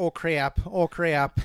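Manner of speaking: loud put-on small-town Midwestern Wisconsin accent. Discussing funny small-town Midwestern voices, giving an example in a Wisconsin accent. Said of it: "Or like Wisconsin".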